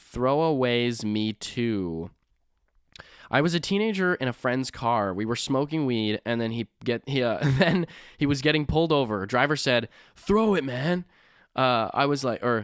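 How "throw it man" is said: put-on stoner voice, much higher and slower. Reading a listener's story, speaker quotes the driver in a stoner voice. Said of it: "that's like my stoner voice".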